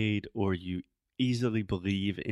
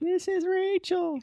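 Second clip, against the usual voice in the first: silly, ridiculous put-on voice, higher and louder; 5 dB louder than usual. Retelling a prank phone call as a joke: ridiculous put-on voice. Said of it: "in my most ridiculous voice possible".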